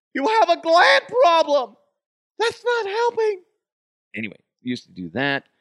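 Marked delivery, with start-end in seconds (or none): 0.2-3.5 very high, loud belted voice. Retelling a recurring bit as Mama the Huff, a mother character: Mama the Huff voice. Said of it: "Mama the Huff or Mama Evans".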